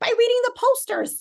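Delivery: tiny, very high-pitched squeaky voice. Retelling how he answered live on tv, in a little high-pitched voice. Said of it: "he had this little high pitched voice".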